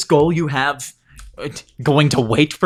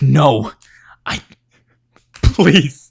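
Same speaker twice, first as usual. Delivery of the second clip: voice beginning to break into crying. A character pleading, starting to cry. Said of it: "And he's just gonna start crying".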